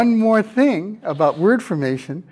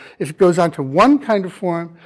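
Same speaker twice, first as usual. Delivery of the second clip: normal talking voice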